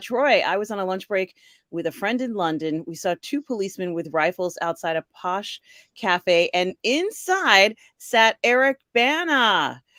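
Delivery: ordinary talk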